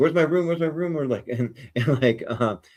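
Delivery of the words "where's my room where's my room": high, frantic, rapidly fired off, repeated. Speaker describing a story, acting out Rocky first arriving on the ship: frantic Rocky impression. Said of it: "he's all over the place".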